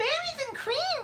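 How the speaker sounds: put-on whining, complaining tone, words drawn out. Asked by a listener to say a phrase in the whiny Jay Leno voice. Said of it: "can you say berries and cream in your whiny voice?".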